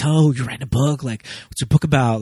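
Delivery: put-on starstruck, awed voice. Retelling a character's question to a novelist: imitating starstruck awe. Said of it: "in awe of all that process".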